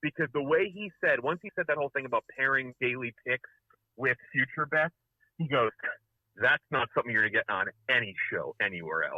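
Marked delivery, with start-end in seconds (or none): 6.4-9.2 mock smug, self-satisfied, pleased-with-himself douchey bragging. Retelling a line said on the show: imitating the Bomber smugly. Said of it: "the smug way".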